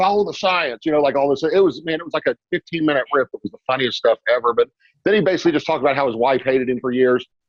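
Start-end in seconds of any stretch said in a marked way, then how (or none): 0.0-0.8 fake old-fashioned English accent. Retelling a comedian marching on stage, imitating Jim Breuer's 1800s English accent. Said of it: "talking like an Englishman from the eighteen hundreds".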